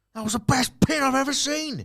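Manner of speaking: put-on very high, loud, sincere, thrilled scream. Recalling a commentator's reaction to a wrestling pin, retelling a sincere scream. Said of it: "just screamed".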